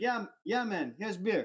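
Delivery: put-on Eastern European accent. Retelling a russian guy handing over a beer: imitating eastern european accent. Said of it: "he's got this, like, Eastern European accent".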